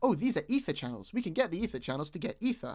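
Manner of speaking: usual speaking voice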